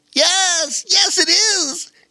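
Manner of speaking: very high-pitched, very slow, drawn-out exclaiming. Narrator reads a young otter answering his friends: excited exclamation. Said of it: "exclaimed Bobo Chico, hopping up and down".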